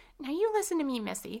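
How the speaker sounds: high, very loud snap. Violet, after a blow stops the narrator's wailing, addresses Missy: snapped. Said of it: "she snapped".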